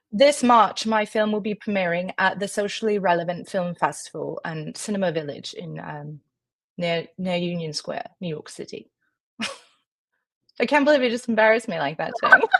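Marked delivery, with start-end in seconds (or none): 0.2-9.0 put-on English accent, improvised on the spot. Asked by the other speaker to talk with an English accent, English accent. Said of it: "with an English accent?".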